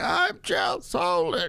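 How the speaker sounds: put-on old man voice. Mocking a fighter on a clip who sounds eighty: imitating Chael Sonnen as an old man. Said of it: "When did Chael Sonnen start being like".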